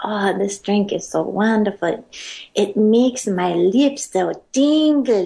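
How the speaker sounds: put-on sultry Brazilian accent. Retelling what a woman said about her drink: imitating a sexy Brazilian accent. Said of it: "She had this super sexy accent".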